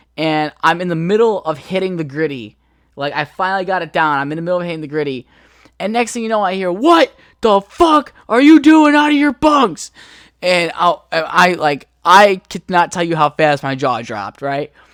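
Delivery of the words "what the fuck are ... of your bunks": play-acted very high, loud, raging drill-sergeant yell. Recounting a drill sergeant catching them out of bunks at 2 a.m., imitating his yell. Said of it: "He's like yelling at us".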